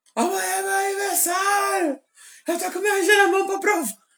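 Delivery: mock very high, shrill, shrieked shout. Speaker retells shouting to get a birthday photo: retelling own past yell. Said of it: "eu comecei a gritar".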